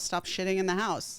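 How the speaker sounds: ordinary talk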